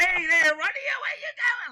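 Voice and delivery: very high, loud put-on voice, pushed high. Explaining how he found a character's voice, the speaker tries a Joe Pesci voice. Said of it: "Like Joe Pesci".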